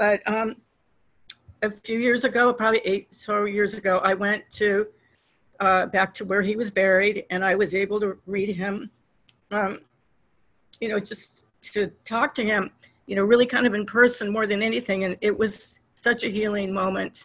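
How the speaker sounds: emotional, tearful voice on the verge of crying. Recalling finally visiting the grave of someone who died, the speaker is close to tears. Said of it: "I'm going to cry because it's always hard".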